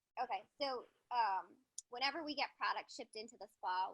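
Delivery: speaking up.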